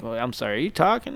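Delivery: soft, quiet, low-key, almost under the breath. Comparing with an impression of Ben Carson. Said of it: "kinda like".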